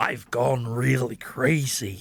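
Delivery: very slow, each word drawn out. Imagining a Mad Max casting, doing a Jack Nicholson impression. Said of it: "that's, like, an impression".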